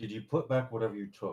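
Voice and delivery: soft, hushed, secretive half-whisper. In a roleplay scene, speaking privately to another character, half-whispering. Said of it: "I just whisper this to him".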